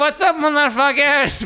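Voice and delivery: exaggerated put-on Persian accent, very high-pitched. Retelling a comedian who did his whole set in a persian accent. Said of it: "do his entire act in a Persian accent".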